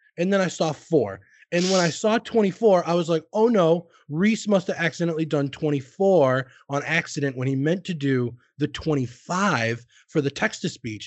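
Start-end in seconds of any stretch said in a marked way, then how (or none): none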